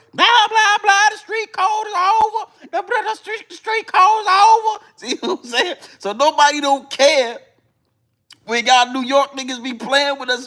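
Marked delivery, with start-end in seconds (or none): 0.2-4.8 high-pitched put-on Southern accent, pitched way up. Imitate how he was talking about the street code, in his down south accent. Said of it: "that's his down south accent that he was doing".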